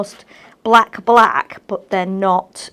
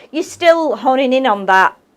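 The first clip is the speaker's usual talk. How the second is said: usual speaking voice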